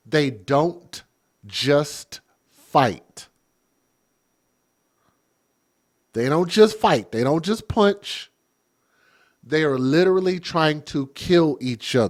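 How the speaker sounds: very slow, deliberate, each word spaced out. Addressing listeners and repeating a point for emphasis, said real slow. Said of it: "I'm going to say this real slow".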